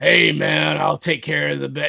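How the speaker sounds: put-on gruff, bad-boy voice. Showing how a rebel bad-boy character is not written, in a gruff voice. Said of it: "like, gruff".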